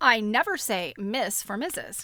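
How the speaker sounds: usual speaking voice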